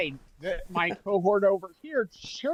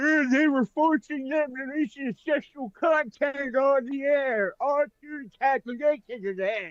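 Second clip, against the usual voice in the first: mocking put-on voice, much higher; 6 semitones higher than usual. Dismissing a woman's claim, mocking Miss Henson. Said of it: "Sorry for my mocking voice".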